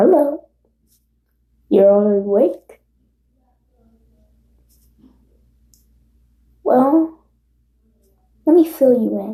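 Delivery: teasing, easygoing, playful, light tone. Narrating a story, a character greets those waking up before explaining curses: playful Gojo tone. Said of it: "in like a playful tone".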